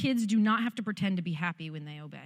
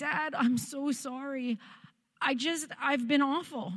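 acted-out tearful weeping, higher; 6 semitones higher than usual. Retelling apologising to her dad: retelling own weeping. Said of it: "And so I'm weeping".

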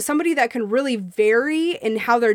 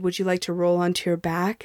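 husky, sultry, sexy voice; 5 semitones lower, 4 dB quieter than usual. Retelling the question he asked her, in an imitated sexy, husky voice. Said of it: "in this sexy, husky voice".

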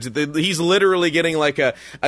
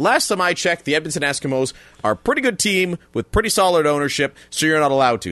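ordinary talk

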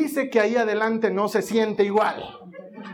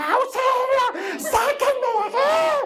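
play-acted, very high, drawn-out wailing child's scream. Retelling how the other daughter screamed on the same ride: imitating a child screaming. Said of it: "se esconde en el estómago de mi cuñada y gritaba".

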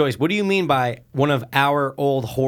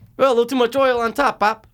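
high, put-on mocking voice. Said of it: "'Cause she's just like".

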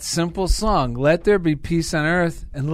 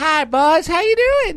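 very high-pitched voice; 11 semitones higher than usual. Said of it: "It's [name]".

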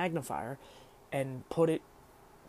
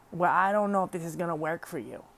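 poor put-on elderly woman's voice; 2 semitones higher, 4 dB louder than usual. Retelling how the lady at the desk objected to the help; poor old lady impression. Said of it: "Poor impression of an old lady".

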